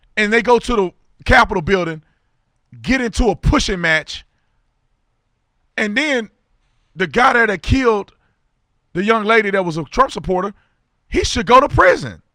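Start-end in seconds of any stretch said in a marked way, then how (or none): 5.8-12.1 very high, loud, heated, worked-up rant. Speaker talks to listeners in their cars, getting worked up. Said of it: "I'm getting so worked up".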